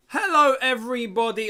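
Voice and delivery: voice breaking on the word hello. Opening the FA Cup final watch-along, greeting everyone with a voice crack. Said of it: "I start with a voice crack".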